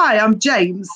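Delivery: slouchy, super-relaxed, very casual, laid-back delivery. Retelling a phone call answered by a guy: imitating a very casual voice. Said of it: "Very cash".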